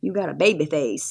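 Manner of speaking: put-on rural country accent. Quoting what your doctor said to you, in his country accent. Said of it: "He said it with that country accent".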